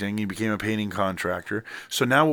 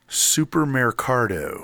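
supermercado said in thick, heavy American English accent. Giving a Spanish word to guess in English: gringo American accent on Spanish. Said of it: "You said it with a gringo accent".

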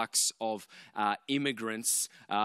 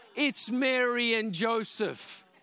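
put-on loud, very high, drawn-out child's shout; 11 semitones higher, 3 dB louder than usual. Retelling what Amalia shouted on seeing two women in headscarves: imitating Amalia shouting. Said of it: "Shouts it".

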